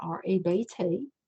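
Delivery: very slow Tennessee country accent, drawled. Teaching a class and saying the term again: country accent. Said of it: "I'm gonna bring out my country accent".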